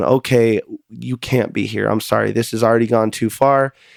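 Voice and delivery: ordinary talk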